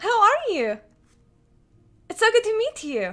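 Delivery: very high, loud, excited squeal, swooping in pitch. Playing a character greeting someone she has just met: Zaitharia's very high-pitched voice. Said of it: "This is very high pitched voice".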